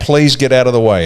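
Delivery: ordinary talk, nothing marked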